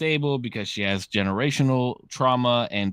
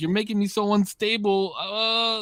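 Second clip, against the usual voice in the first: very high, crying, wailing lament; 10 semitones higher than usual. Recounting a woman's outburst at a man: imitating someone wailing. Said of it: "starts like walling out".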